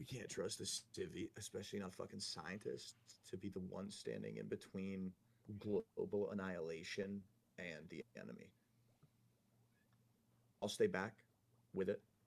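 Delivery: low, private, confiding voice. In character, privately urging a teammate about staying behind with explosives: lowered, hushed voice. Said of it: "lower my voice and kinda try to keep it between me and Hank".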